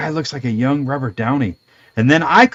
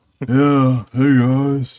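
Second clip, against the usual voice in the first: flat, listless, low-energy, zero-effort everyman voice. Mocking how the actor played Ben Grimm: low-energy Ben Grimm impression. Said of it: "he sounds like he lives on the fucking couch".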